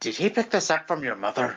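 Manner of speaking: whispering. Whispering an in-character aside to Milo during the scene: whispering. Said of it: "I whisper to Milo".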